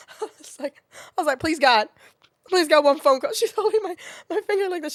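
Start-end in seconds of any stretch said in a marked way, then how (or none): 1.4-3.3 put-on cry-laughing delivery. Speaker acting out their past self pleading, retelling a cry-laughing plea. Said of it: "We're both like cry laughing".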